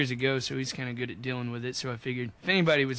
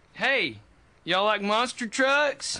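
high, swooping, full-throttle enthusiasm, rising at the end; 9 semitones higher, 4 dB louder than usual. Re-enacting asking a concert audience about monster trucks: full enthusiasm reenactment. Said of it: "Full enthusiasm".

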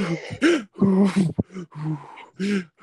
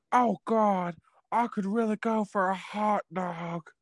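slowly stretched-out put-on character voice; 5 dB quieter than usual. Imitating the girl from Legally Blonde: impression of her voice. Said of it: "she talks like this".

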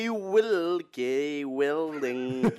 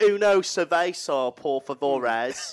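Spanish spoken very slowly in hard English accent. Joking about saying foreign words in an english accent, in a hard english accent. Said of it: "we're doing it like hard English".

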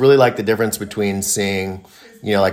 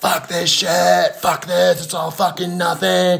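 put-on high, raw, drawn-out top-of-the-lungs scream; 10 semitones higher than usual. Retelling how a guy at a gathering screamed: imitating a man screaming. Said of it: "started screaming at the top of his lungs".

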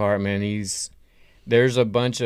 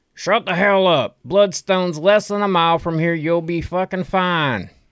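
put-on loud, high-pitched old-prospector holler; 9 semitones higher, 5 dB louder than usual. A game master voices an old prospector in the back, old prospector voice. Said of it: "this one old prospector in the back".

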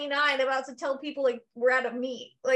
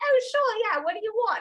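fake Australian accent, put on playfully; 8 semitones higher than usual. Retelling copying the boss's accent back: copying an Australian accent. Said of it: "I used to do it to Piff".

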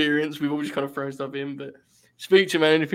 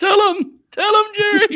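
put-on shriek, much higher, louder, slower; 8 dB louder than usual. Recounting a match, the speaker acts out a man in the story, retelling a shriek. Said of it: "he starts like shrieking".

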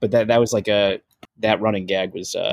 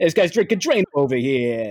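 put-on New York accent; 4 semitones higher than usual. Describing the energy of a joke, the speaker does Josh's New York voice. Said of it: "like Josh's New York voice as well, but like the Gotham City kind of thing".

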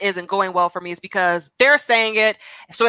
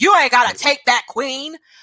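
put-on raised-voice yell, much higher; 5 semitones higher than usual. Describing a man's videos, retelling how he yells in each one. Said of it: "raising his voice".

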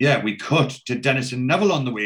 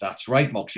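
ordinary talk, nothing marked

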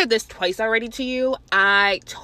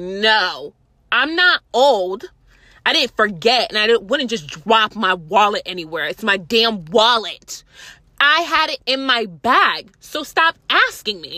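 acted, annoyed, slow, drawn-out delivery with attitude; 4 dB louder than usual. Retelling being questioned again about a wallet: retelling giving attitude. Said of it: "like about to give her attitude".

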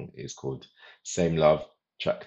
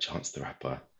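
hushed whisper on one word; 8 dB quieter than usual. Naming an artist while talking about a band, whispering the name. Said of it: "I'll whisper it".

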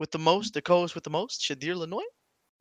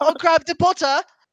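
weird mock British accent. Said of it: "the weirdest British person ever".

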